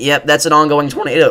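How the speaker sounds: cracking voice. Narrating live video of an ongoing tornado to viewers, voice cracking. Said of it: "that was a bad voice crack".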